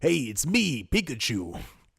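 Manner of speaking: bad gruff voice, very slow, dragged out and swooping. Joking about who should voice Pikachu in a film, bad Stan Lee impression. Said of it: "My Stanley got way worse".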